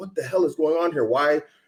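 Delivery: put-on upset cursing. Retelling what Russian soldiers say in videos: imitating a cursing, upset soldier. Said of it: "they're cussing".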